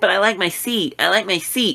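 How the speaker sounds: snotty, put-on bitch-ass tone. Retelling a guy in their row who refused to move, imitating his bitch-ass voice. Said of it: "He says it exactly like that in his bitch ass voice".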